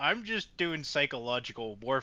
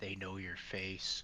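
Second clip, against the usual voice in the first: very quiet, low, menacing half-whisper; 5 semitones lower, 10 dB quieter than usual. Half-whispering a threat into a captured guard's ear: half-whispering in character. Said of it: "I'm once again gonna whisper in his ear".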